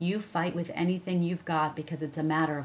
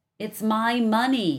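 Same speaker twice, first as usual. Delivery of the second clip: muffled shout, much higher; 5 semitones higher, 7 dB louder than usual. Narrator reads a story; a boy shouts back at a girl through a pillow: muffled shout through a pillow. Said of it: "he shouted, still through the pillow".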